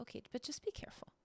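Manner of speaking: cautious, soft, hushed whisper in a little mom voice. Describing the voice in the back of their mind: little mom voice. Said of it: "the little mom voice in the back of my my mind is like".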